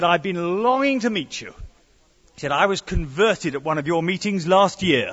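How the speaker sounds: ordinary talk, nothing marked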